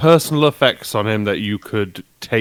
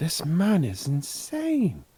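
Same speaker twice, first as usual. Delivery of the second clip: very slow, drawn-out half-whisper; 7 semitones higher, 9 dB quieter than usual. Leaning over to another character in the game and half-whispering: half-whispering. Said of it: "I'm just gonna whisper".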